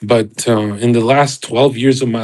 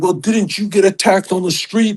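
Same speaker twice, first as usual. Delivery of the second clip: play-acted, high, agitated, worked-up freaking out; 8 semitones higher than usual. Retelling a heated exchange where the other person starts freaking out: imitating someone freaking out. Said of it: "he just starts freaking out on me".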